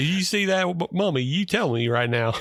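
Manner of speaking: put-on Southern British accent. Imitating a film's New York cop: accent between Deep South and British. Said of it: "he's got an accent that is somewhere between Deep South and British".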